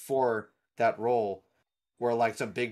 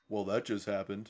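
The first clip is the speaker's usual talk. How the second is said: super deep, very low-pitched voice; 2 semitones lower, 6 dB quieter than usual. Imagining the actor quipping in Marvel movies: super deep Jensen Ackles voice. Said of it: "his super deep voice would be like".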